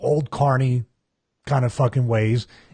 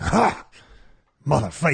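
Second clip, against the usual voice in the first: mock bowed-up, combative, angry, aggressive snapping outburst; 2 semitones higher than usual. Retelling how a wrestler reacted to being rushed: imitating an angry outburst. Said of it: "he bowed up like a motherfucker".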